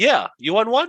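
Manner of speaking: put-on high, loud woman's voice with Chinese accent. Retelling a phone call to book a night market stall: imitating a Chinese lady. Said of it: "a Chinese lady at the end".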